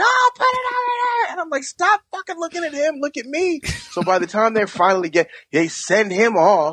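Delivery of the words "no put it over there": very high-pitched, shrill shouted voice. Telling a story where two people yell at a man, retelling people yelling. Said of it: "they're both yelling at him".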